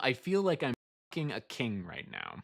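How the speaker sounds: plain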